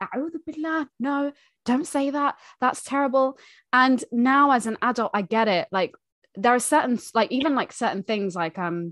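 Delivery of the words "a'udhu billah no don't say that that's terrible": mock shocked reaction, high pitched. Retelling how mum reacted to bad words, imitating mum sounding shocked. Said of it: "she would just basically get shocked and be like".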